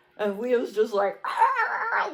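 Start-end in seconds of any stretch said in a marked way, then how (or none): 1.3-2.1 very high mock dog-voice yell. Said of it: "like he's yelling at her".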